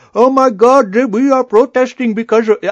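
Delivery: shrill, very high, loud, bad fake Middle Eastern accent. Retelling a man on CNN who was faking a Middle Eastern accent. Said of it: "clearly faking a Middle Eastern accent".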